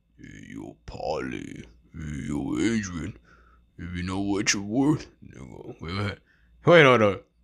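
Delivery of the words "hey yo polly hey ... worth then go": deep, hushed, dropped voice under the breath. Teaching how to do voice impressions: Sylvester Stallone. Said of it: "Sylvester Stallone".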